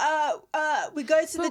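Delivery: mock hesitant stammer. Retelling how he answered the mum's question about what they like, imitating nervous stuttering. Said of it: "Because why are you stuttering?".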